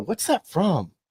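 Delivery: put-on sarcastic, snarky, pointed little jab. Retelling a question asked as a video played: imitating own snarky question. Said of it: "I was trying to be snarky".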